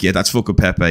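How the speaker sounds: plain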